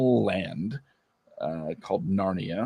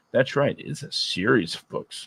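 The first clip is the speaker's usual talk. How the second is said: condescending, patronizing, talking-down tone; 2 semitones higher than usual. Commentator explaining the series to the audience: condescending tone. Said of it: "I sound really condescending".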